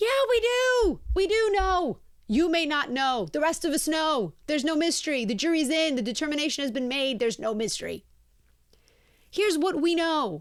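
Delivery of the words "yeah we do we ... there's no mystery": furious, heated outburst held in check, banshee-like screaming. Retelling a reply to a morning show reporter: imitating own screaming like a banshee. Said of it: "I just start screaming like a banshee".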